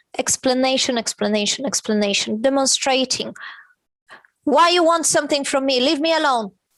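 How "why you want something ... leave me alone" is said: mild, shouty, shouting. Retelling an outburst from yesterday: imitating someone shouting. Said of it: "Then why are you shouting at me?".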